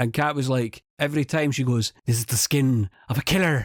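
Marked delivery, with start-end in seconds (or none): 2.1-3.7 faked, put-on Irish accent. Teasing someone about a movie line she repeats: fake Irish accent. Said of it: "and you do it like you're Irish".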